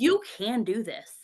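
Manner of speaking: mock-angry, put-on furious outburst. Recalling working every possible hour, retelling being mad at God. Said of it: "one day I got super mad at God".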